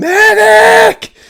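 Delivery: shrill, very loud, high, drawn-out scream. Recounting yelling for a medic from the back: retelling a scream. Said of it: "I'm in the back screaming".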